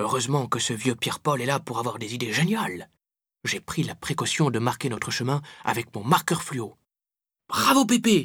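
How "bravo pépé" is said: very high, bright, cheering exclamation. First-person narrator praising Pépé for marking the path, exclaiming.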